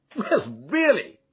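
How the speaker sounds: hearty, high cry through laughter. After laughing for minutes in front of the fire, a man cries out, laughing heartily. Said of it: "he cried, and then he choked and laughed again".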